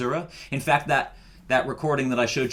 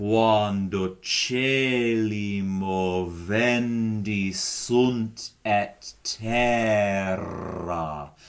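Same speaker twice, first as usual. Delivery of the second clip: slow, deliberate Latin, trilled rolled rr in terra; 3 semitones lower than usual. Repeating the latin phrase a second time: slower, rolling the double r. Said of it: "I'll do that one again slower".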